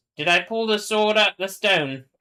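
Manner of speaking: mock high English accent. Speaker, saying he has authority now, tries the line in an English accent. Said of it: "Should I say this in an English accent?".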